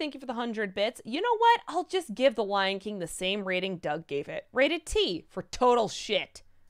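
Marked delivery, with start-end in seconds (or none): none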